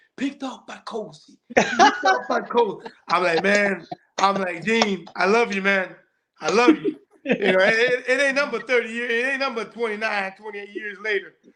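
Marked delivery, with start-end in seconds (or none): 0.2-2.9 put-on whisper, higher pitched and faster. Recalling a man who recognized you across a basketball court, retelling a whisper. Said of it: "he whispers to me".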